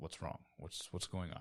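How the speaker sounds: caring, endearing, compassionate fatherly voice. A player voicing Cavagal, speaking to Finn like a father to a son. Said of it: "most endearing and um, compassionate, I guess, voice".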